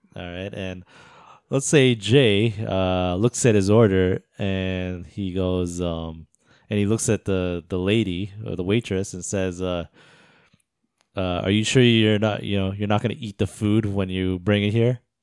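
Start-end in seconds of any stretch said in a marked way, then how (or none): 11.4-14.9 mock snide, rude, condescending talking-down tone. Acting out a made-up friend insulting a waitress: imitating a rude, condescending remark. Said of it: "he says something really rude and really condescending".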